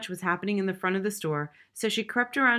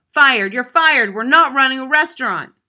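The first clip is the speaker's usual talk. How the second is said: shrill, very loud, all-out scream; 6 semitones higher, 13 dB louder than usual. A man screaming at another man after the truck is smashed, screaming. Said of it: "went back to screaming at Little Joe".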